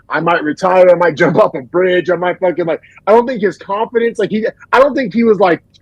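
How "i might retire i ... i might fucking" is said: ordinary talk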